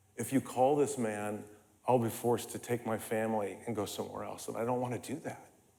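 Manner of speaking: very hushed, low, chilling, loving voice. Recalling his dad's words to the others; imitating a chilling, quiet, loving voice. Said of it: "with just this chilling, chilling, quiet, loving voice".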